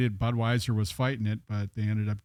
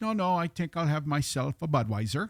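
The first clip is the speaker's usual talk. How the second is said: horrible, bad Irish accent, pitched higher. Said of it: "My horrible Irish accent".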